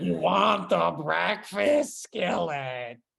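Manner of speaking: slow, drawn-out put-on character voice. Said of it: "a lady that sounded exactly like Roz".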